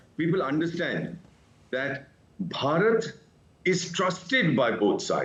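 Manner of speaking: slow, word by word with pauses.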